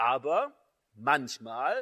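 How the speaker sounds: manchmal stressed, drawn out slow and loud.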